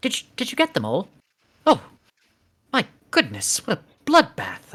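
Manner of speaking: tiny, high, swooping gnome voice. Voicing a tiny gnome in the story, in a little gnome voice. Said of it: "you hear a little voice like".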